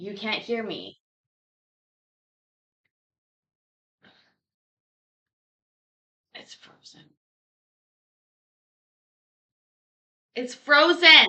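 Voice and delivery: full-on, high, very loud yell. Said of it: "I'm just yelling now".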